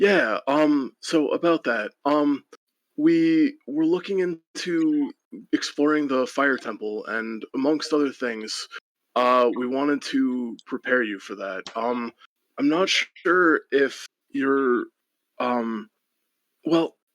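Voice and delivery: nervous, flustered stammering with hesitations, rambling. Voicing a character asking another's permission to explore the temple: flustered, stuttering. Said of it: "stutters for a second and goes".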